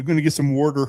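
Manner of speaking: put-on Philadelphia accent. Trying the Philly accent suggested for a character: put-on Philly accent. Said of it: "the Philly accent from the Iron".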